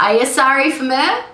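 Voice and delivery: put-on Guyanese accent. Repeating a sentence the family still teases about, in a Guyanese accent. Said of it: "say one thing in a Guyanese accent".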